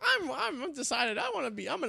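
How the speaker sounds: high-pitched, swooping, announcer-style delivery. Retelling a Senate candidate's campaign ad, imitating his high-pitched voice. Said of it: "He has a high-pitched voice".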